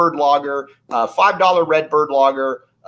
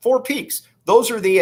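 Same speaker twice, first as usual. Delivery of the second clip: voice cracking and breaking up, very high; 9 semitones higher than usual. A show host talking mid-segment: voice cracking. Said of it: "as my voice cracked right there".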